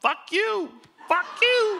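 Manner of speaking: shrill, very high, very loud screeching parrot yell. Retelling what the parrot said on a live mic: imitating a parrot yelling. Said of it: "Bird starts yelling".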